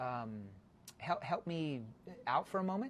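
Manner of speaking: slow, hesitant, confused mumble, very soft and very low. Demonstrating a call to a business owner, slow and confused-sounding. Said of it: "When I slow it down and I sound like I'm confused".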